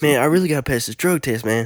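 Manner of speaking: mock run-together fast talking. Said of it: "everything runs together. It's like an auctioneer".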